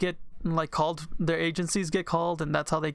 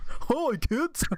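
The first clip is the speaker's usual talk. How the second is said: sinister put-on clown voice, pitched up; 9 semitones higher than usual. Joining a joke bit about a clown and a van: clown voice. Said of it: "Now you're in my territory with the clown".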